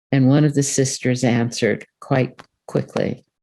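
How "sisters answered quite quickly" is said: ordinary talk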